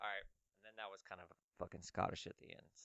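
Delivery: ordinary delivery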